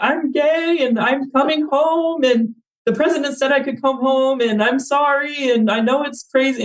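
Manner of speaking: slow, very high-pitched, drawn-out blubbering. Retelling a voice memo recorded alone on a balcony: retelling own past bawling. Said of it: "I'm just bawling into this".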